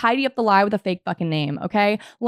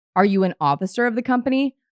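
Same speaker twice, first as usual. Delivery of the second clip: normal talking voice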